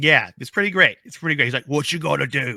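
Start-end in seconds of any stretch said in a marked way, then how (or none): 1.7-2.6 put-on Cockney British accent. Quoting a line from a man doing a voice, in a cockney british accent. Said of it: "a man doing a Cockney British accent ... that's how it sounds".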